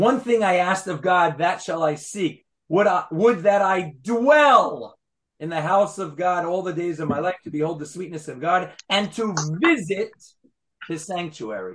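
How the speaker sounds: stressed "dwell" and "visit".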